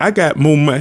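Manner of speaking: plain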